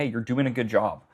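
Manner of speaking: usual speaking voice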